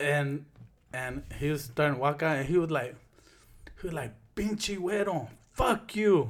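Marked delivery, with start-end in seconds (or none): 4.3-6.3 yelling, higher pitch. Retelling someone quitting a job and cursing: imitating someone yelling. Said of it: "he's yelling at him".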